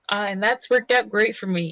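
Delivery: dry sarcastic delivery, meaning the opposite. Voicing a character's remark about how things worked out: sarcastic. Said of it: "he said sarcastically".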